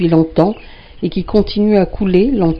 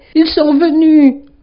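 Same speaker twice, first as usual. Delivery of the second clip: very high, piercing, loud shriek; 10 semitones higher, 5 dB louder than usual. A narrator voices a woman crying out in the night to two others, screamed.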